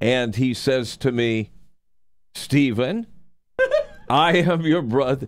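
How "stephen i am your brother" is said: put-on German accent, pitched up, swooping. Retelling first meeting a brother at the door, imitating Wolfgang's German accent. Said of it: "That's my German accent".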